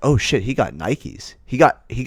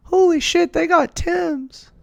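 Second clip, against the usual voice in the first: put-on girl voice, very high and drawn out. Imitating how high school girls reacted: imitating girls' voice. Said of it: "my imitation girl voice".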